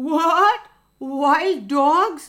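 trembling, quavering voice. Talking with a rooster, a fox answers in a shaky voice. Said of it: "Fox said in a shaky voice".

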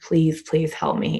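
put-on sobbing with pleading tone. Retelling pleading with a former partner who refused to help, reenacting sobbing. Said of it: "And I'm like sobbing".

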